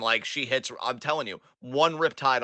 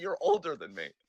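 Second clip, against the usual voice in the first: mock flat deadpan delivery; 3 dB quieter than usual. Retelling a man's reply to being called an older brother, retelling a deadpan reply. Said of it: "He just looked at you like".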